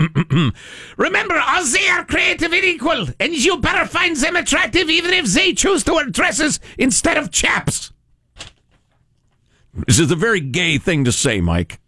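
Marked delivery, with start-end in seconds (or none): 1.0-7.9 put-on German accent. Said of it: "he would like me to read it in a mock German accent".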